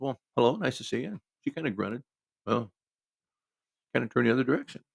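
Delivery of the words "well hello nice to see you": usual speaking voice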